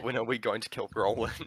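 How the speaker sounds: secretive, conspiratorial half-whisper. Half-whispering to another player's character, out of earshot: half-whispering in character. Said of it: "I whisper to Harry".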